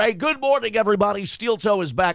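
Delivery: radio announcer voice. Asked by a viewer to do his radio voice, radio voice. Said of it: "when I do this voice here".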